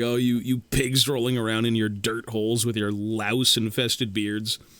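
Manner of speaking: ordinary talk, nothing marked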